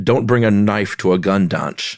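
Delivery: put-on Scottish accent. Showing how to do Connery with an esh: Sean Connery impression. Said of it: "How's that?".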